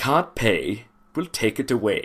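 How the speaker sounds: put-on British accent, best attempt. Naming a favourite British TV show, in a British accent impression. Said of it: "that's my best impression of a British accent".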